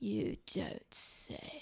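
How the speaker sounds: breathy, lifeless, near-dead, corpse-like whisper. Replying to another speaker, sounding like a corpse. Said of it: "I sounded like a, a corpse".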